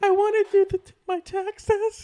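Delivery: put-on shrill, loud, slow, drawn-out old lady voice. Retelling a prank phone call pretending to be an old lady: imitating an old lady voice. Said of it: "I pretended to be an old lady".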